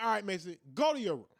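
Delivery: ordinary talk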